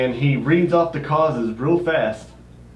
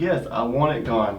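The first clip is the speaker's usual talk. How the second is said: ordinary talk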